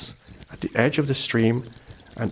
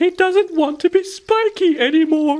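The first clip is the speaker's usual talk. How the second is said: high-pitched giggling chatter; 6 dB louder than usual. In a story read aloud, Felicity Fieldmouse remarks about him to Shona, giggling. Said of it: "giggled Felicity Fieldmouse".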